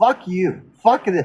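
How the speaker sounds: normal talking voice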